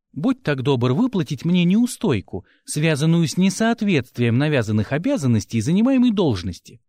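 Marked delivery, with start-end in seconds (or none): none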